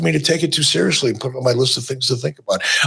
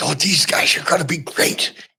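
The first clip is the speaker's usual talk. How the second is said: all-excited, eager delivery. Retelling how Greg Gagne pitched wrestlers: imitating Greg Gagne excited. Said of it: "he would be all excited".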